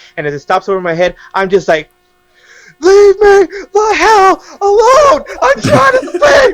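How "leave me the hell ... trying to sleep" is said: very high, shrill, loud screaming outburst. Retelling yelling at a presence over the bed at night: imitating own scream. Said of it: "'Cause I screamed at the top of my lungs".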